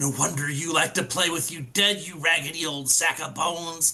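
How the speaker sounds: harsh, loud whisper under the breath. Speaker's character slides up and speaks to someone across the distance: harsh whisper. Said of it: "I'm gonna whisper harshly across the distance".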